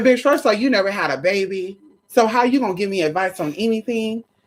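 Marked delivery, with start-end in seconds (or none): none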